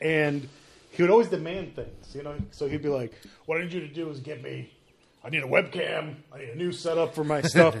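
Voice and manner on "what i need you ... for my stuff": put-on pirate voice. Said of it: "he sounded like a pirate".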